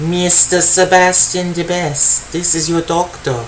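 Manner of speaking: creepy, flat, robotic, machine-like monotone voice. Trying out a voice for a line, speaker settles on creepy robotic GLaDOS-like voice. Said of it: "It's creepy. I know it sounds kind of like GLaDOS".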